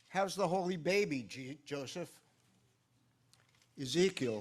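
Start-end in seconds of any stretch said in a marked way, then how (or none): 0.2-2.1 sarcastic, mocking, teasing and needling delivery. Joseph quoting his carpentry foreman, who asks this daily: mock-sarcastic, imitating Ezekiel. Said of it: "asks me sarcastically".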